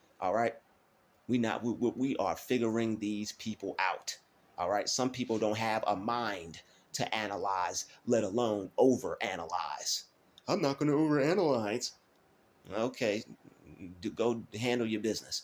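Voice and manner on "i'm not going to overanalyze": high, dismissive, scornful mocking brush-off tone. Mimicking a viewer who refuses to overanalyze: mocking imitation of a viewer. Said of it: "the way you sound right now".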